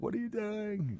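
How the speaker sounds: mock shrill scolding scream, very high. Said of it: "yelling at me".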